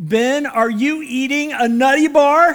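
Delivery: loud, high shout. Retelling how mom yelled from the other end of the house, imitating her yell. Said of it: "my mom yelled".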